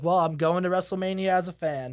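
plain

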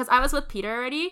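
plain

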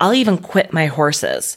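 plain

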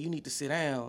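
put-on curt, scolding chaperone-like voice. Retelling a bus trip, the speaker acts out the band chaperone: imitating a chaperone yelling. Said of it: "like yelling at me".

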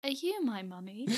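cheeky, playful, needling teasing. Retelling how Mum would suddenly stop and tease: imitating Mum teasing. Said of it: "she'd go".

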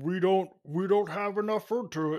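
play-acted authoritative voice, bossy but fumbling its words. Mocking the other speaker's tone for the school administration: imitating an authoritative but bumbling tone. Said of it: "You changed your tone of voice".

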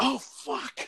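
hushed, breathy, whispered scream of pain. Retelling a movie scene where a woman is attacked: imitating someone screaming. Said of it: "getting munched on and screaming like".

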